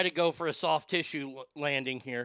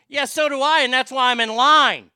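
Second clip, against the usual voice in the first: vinegary, sour sarcasm, shrill, very high and loud; 10 semitones higher, 12 dB louder than usual. Acting out a retort to someone skipping the line, mock vinegar-sour reply. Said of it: "I will say it with at least that much vinegar in my voice".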